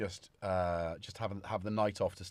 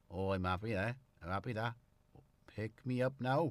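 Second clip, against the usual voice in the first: put-on cat voice with Welsh accent; 3 dB quieter than usual. Voicing a cat while looking at it, in a Welsh-accented cat voice. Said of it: "I think he definitely works better in Welsh".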